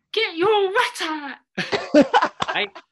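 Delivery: very high, very loud little squeak. Speaker recalls a man's nightly catchphrase, in Adam Boulder's squeaky voice. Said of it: "he had a really squeaky voice".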